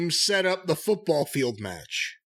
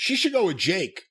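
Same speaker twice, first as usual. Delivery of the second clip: plain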